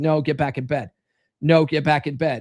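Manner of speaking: stern, strict voice. Showing a new pack member how to send the kid back to bed: stern dad voice. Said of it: "start using your stern dad voice".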